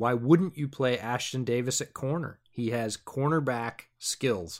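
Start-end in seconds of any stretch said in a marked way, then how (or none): none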